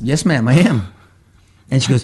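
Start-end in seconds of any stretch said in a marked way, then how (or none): 0.0-0.8 nonchalant, plain, casual delivery. Recounting own answer to a woman's question: retelling a nonchalant reply. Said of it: "just plainly, nonchalantly just said".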